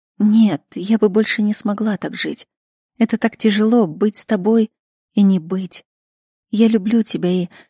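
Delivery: plain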